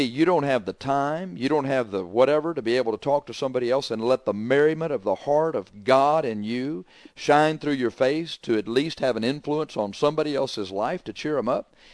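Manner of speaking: plain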